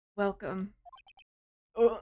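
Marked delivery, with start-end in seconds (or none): 0.2-0.7 unsettling, soul-chilling, creepy, eerie voice. Voicing a game character greeting a visitor: creepy voice. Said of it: "Talk about a creepy voice".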